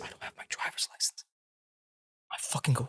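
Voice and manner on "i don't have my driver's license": hushed, offhand, low-key, breathy whisper. Retelling how a friend quietly admitted having no license: imitating a low-key remark. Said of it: "just really low key".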